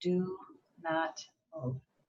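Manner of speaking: soft, very quiet half-whisper. Retelling a warning heard at a traffic light, imitating a half-whisper. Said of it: "like a whisper in my ear".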